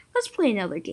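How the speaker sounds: ordinary delivery, nothing marked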